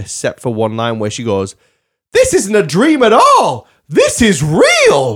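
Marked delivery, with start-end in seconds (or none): 2.1-5.2 put-on loud, high, slow, sing-song kids' TV host reading. You show how an actress delivered one line in a film, Mia Farrow, Sesame Street-style delivery. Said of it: "Like she should be on Sesame Street".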